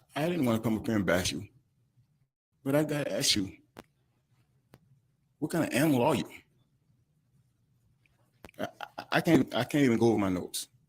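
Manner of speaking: tearful speech broken up by crying. Speaking before the judge to the man who stole from them: crying while speaking. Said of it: "I'm sitting here crying".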